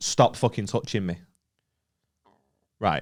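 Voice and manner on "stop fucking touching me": ordinary talk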